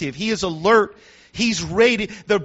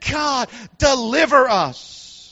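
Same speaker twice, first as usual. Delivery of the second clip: impassioned, fervent, pleading cry; 3 semitones higher than usual. Retelling how people prayed under the Pharaoh, acting out a full-voiced cry. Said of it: "with all of their voice, they cried out unto God".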